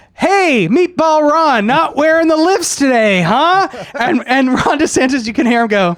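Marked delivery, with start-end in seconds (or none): 0.2-3.7 high, drawn-out mocking jeer of a heckler. Retelling how a heckler roasts a governor on the stairs: imitating a heckler roasting. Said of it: "basically roasts him every time".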